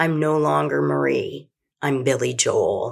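icy, chilling, cold tone. Telling a story, quoting a woman at the kitchen table in a cold voice. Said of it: "in a cold voice said".

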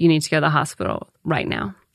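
ordinary delivery

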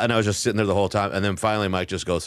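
ordinary delivery

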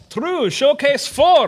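put-on Russian-accented voice. Answering a comic-book trivia question during a game, in a Russian accent. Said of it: "You're Russian this time".

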